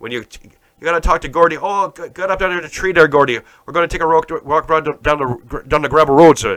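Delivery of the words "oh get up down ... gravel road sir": bad put-on Maritime Canadian accent, much higher pitch. Joking about the maritime provinces, speaker imitates talking to gordy, bad maritime canadian accent. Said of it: "That's not even a good accent".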